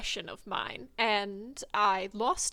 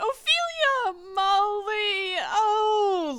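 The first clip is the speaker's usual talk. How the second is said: flustered squeaking, much higher and slower; 11 semitones higher, 7 dB louder than usual. Narrating, the speaker voices Rise, caught off guard by Ophelia and Molly: high-pitched flustered squeak. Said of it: "he high-pitched squeaks like".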